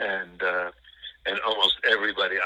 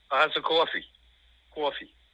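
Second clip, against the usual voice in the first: put-on strong New York accent, higher; 8 semitones higher than usual. Speaker showing the accent they used to have: strong New York accent. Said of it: "I had a very strong New York accent".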